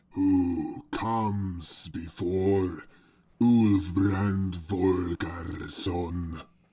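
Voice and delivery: booming bass giant voice. Narrating a story, voicing a giant's question: booming bass giant voice. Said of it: "The giant speaks in a booming bass voice".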